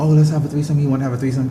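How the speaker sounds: normal talking voice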